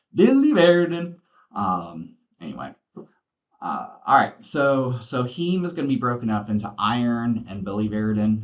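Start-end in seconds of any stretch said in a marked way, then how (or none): 0.2-1.2 very high, very loud squeaky character voice. Pronouncing biliverdin as Billy Verdin in a Beaker voice. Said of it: "I always want to pronounce it like that, the Beaker".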